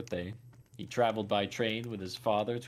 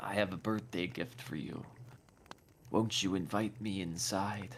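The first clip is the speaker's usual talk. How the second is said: low, rough, rasping monster voice. Narrator voicing a crouching creature speaking to Marcelo, low, raspy voice. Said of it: "it spoke in a low, raspy voice".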